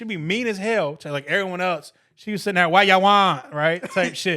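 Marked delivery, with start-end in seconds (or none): 2.7-3.5 very loud, booming, put-on Jamaican accent. Imitating a mean lady at the Subway counter: imitating a Jamaican accent. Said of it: "I was going for Jamaican".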